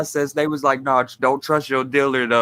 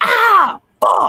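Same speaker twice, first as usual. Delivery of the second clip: mock scream, higher and louder; 6 dB louder than usual. Retelling a funny interview moment, imitating someone screaming. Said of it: "he screamed like a bitch".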